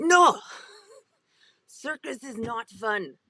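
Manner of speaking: put-on loud, slow, heavy thick Russian accent. Quoting a woman who questioned the speaker about doing circus, in a thick Russian accent. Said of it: "She has this thick Russian accent".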